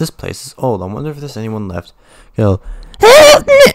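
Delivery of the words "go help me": hideous put-on voice, very high and loud. Playing a game in an old building, voicing a cry for help in a horrible voice. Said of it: "That's a horrible voice".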